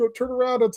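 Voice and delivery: put-on very high, scared kid voice.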